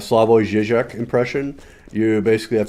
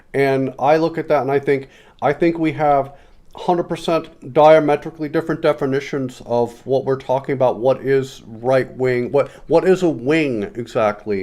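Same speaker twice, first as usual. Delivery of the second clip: halting, stammering debate-lecturer impression. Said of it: "we do Peterson here".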